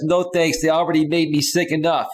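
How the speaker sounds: ordinary talk, nothing marked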